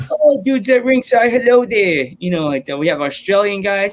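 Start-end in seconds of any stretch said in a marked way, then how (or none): 0.1-2.1 attempted British accent, loud and high-pitched. A speaker shows the others one of his impressions, British accent impression. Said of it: "I do my British ones".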